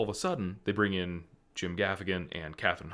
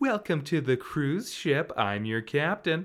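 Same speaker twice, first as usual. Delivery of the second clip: high, announcer-style voice like a captain; 8 semitones higher, 4 dB louder than usual. Retelling how a cruise captain in the film greets guests: imitating Kathryn Hahn. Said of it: "the way she, like".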